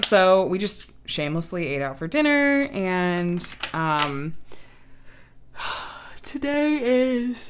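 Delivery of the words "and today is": very slow, stretched through a yawn. Giving a daily update while still tired, yawning while talking. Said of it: "excuse me for yawning".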